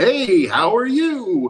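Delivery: very high-pitched, friendliest possible tone. Retelling how a drive-through worker greeted customers over the microphone, imitating a very friendly voice. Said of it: "would do like the most friendly voice".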